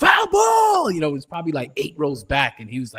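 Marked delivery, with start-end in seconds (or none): 0.0-0.9 very high, shrill, emphatic yell. Retelling how Hector yelled at a foul ball: imitating Hector's emphatic call. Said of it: "He's very emphatic on a foul ball".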